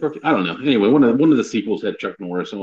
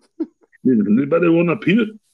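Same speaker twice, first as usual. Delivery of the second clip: put-on Austrian-accented voice, pitched higher; 7 semitones higher than usual. Playing Andre the Giant offering a peanut: Arnold Schwarzenegger voice. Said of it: "I do Arnold voice for Andre".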